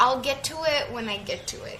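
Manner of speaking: plain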